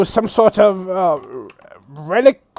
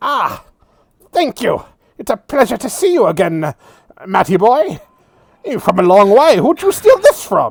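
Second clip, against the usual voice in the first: small, little gnome man character voice. Voicing a gnome man who greets Matthias as the doors open: little gnome man voice. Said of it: "he's a little gnome man. He goes".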